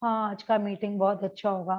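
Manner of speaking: low, flat, dull, listless, bored monotone. Showing how not to announce a meeting: dull, unenthusiastic. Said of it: "ऐसे नहीं बोलिए ... मतलब आप पहले से ही नीरस हो उसको बोलने के लिए".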